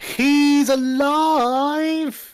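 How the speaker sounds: shouting in a character voice. Calling out in character that a fallen man is alive: shouting in character. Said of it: "are you shouting this?".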